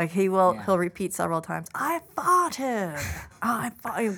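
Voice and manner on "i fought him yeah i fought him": put-on child's British accent, higher. Imitating a child who repeats a phrase: imitating a child's british accent. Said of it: "Again with the British accent".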